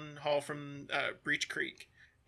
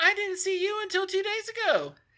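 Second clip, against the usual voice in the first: much higher, very unhappy gnome voice. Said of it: "a very unhappy gnomish voice".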